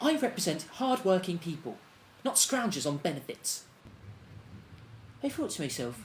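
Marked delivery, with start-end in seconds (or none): none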